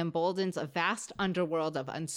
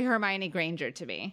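usual speaking voice

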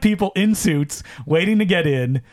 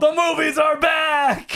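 play-acted shrill, slow, very high holler, "back" stretched; 10 semitones higher than usual. At a screening where a movie star appeared, retelling a loud yell. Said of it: "Really loudly".

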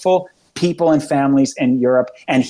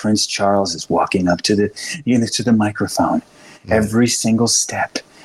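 grave, low golf-announcer tones; 5 semitones lower than usual. Mocking how the media covers the royals, in low, hushed announcer tones. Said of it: "it's just this low and hushed tones".

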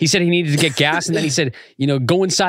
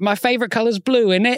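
put-on British accent, pitched up; 6 semitones higher than usual. Answering a request to do a British accent: put-on British accent. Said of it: "Do your British accent".

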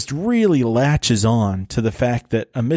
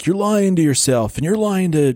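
mock shouting, high-pitched; 7 semitones higher than usual. Recounting a scene where a guy yells at a girl, the speaker is retelling a yell. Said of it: "he's like yelling at the girl".

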